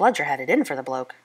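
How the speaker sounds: ordinary delivery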